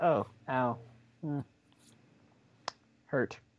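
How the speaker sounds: mock very slow, flat, unbothered deadpan monotone. Mocking a movie character's unbothered reaction to being hurt: imitating a flat reaction. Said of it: "I like how he's just like".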